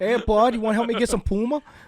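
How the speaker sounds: jokey put-on Canadian accent, very high pitch. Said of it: "random Canadian that came down".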